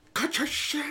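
mock, pitched way up, cross angry scolding. Describing how they talk when it isn't their own dog, acting out getting angry. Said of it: "I get all angry".

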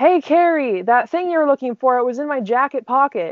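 high yell upward, acted out. Retelling how dad called up the stairs: imitating a yell up the stairs. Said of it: "yells up the stairs".

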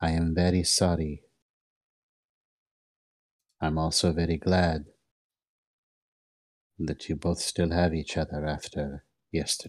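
small, close, contained voice. Narrator voices someone nearby speaking only to two others, in a small voice. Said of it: "in a small voice".

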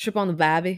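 poor put-on Australian accent. Asked what their Australian accent sounds like, the speaker tries one, bad Australian accent. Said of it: "what's your Australian accent sound like?".

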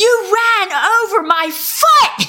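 very high, drawn-out, shocked yell at full lung. Retelling being hit by a car, imitating a yell. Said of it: "I just yelled at the top of my lung".

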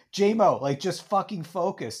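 acted high-pitched screaming. Picturing coaches screaming at J-Mo, imitating coaches screaming. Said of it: "they're out there screaming at him like".

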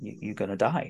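put-on calm. Contrasting it with Professor Zaroff's threat, acting out the line very calmly. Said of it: "it's just very calmly".

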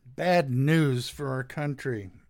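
plain

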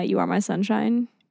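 ordinary delivery

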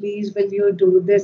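very polite, courteous manner. Retelling asking her husband to do something: imitating own very polite request. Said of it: "in the very polite way".

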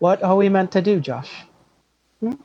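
put-on slow British voice, rising question inflection. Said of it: "talks slow in a British accent".

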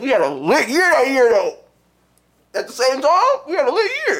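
high, overplayed sarcastic tone.

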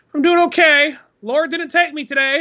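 put-on very high grandma voice. Retelling a talk with a grandma, answering as her: imitating Nana. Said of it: "Hey, Nana, how's it going?".

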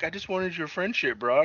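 put-on sorrowful, downcast voice, soft and high. Speaker recounts a Venom movie scene, imitating Cassidy being sad. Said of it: "he's all sad".

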